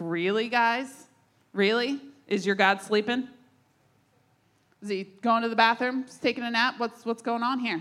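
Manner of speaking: put-on needling, jeering, poking-fun taunting tone. Retelling how Elijah mocked the Baal worshipers: imitating Elijah taunting. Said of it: "He starts taunting them a little bit".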